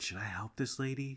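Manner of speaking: high-pitched, hushed half-whisper. Retelling a quiet question to another speaker in a store line: retelling a half-whisper. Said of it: "So I whispered to you".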